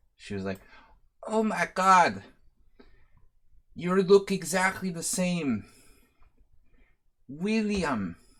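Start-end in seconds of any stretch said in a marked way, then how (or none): 1.3-8.1 bad put-on Serbian lady accent, much higher. Retelling what an old friend's wife from Serbia said on seeing him, bad Serbian lady accent. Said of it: "I do a really bad Serbian lady accent".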